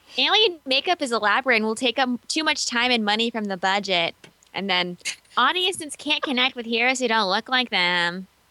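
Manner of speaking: whiny complaining voice. Reading out objections a post tried to head off: mock whiny voice. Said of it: "whiny voice again, here we go".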